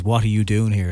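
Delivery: plain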